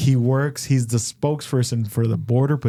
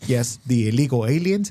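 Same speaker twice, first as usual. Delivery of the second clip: put-on heavy Mexican accent. Retelling what a Border Patrol spokesperson said: imitating a heavy Mexican accent. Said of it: "heavy, heavy Mexican accent".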